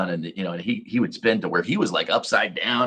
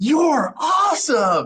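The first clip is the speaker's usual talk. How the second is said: very high, very loud, top-of-the-lungs put-on yell; 5 dB louder than usual. Retelling a boy yelling in a quiet theater: imitating Brooks yelling at the top of his lungs. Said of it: "yells at the top of his lungs".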